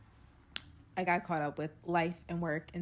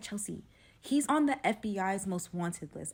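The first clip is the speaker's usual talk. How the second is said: ordinary talk, nothing marked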